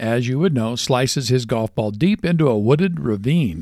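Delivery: ordinary delivery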